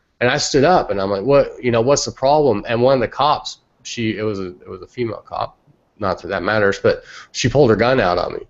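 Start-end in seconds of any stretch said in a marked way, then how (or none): none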